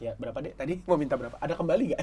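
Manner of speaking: low, soft, gentle fatherly tone.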